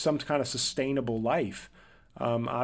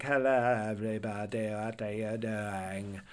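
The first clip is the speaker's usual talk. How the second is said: put-on monotone voice, slower and quieter; 3 semitones lower, 3 dB quieter than usual. Describing a movie you hated, mimic its lead in a monotone Jackie Kennedy impression. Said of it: "a monotone impression of Jackie Onassis".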